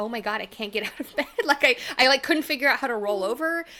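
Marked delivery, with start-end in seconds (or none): 0.0-1.3 put-on, panicked delivery. Recalling not being able to sit up in bed, retelling panicked words. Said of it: "I had like this panicky like".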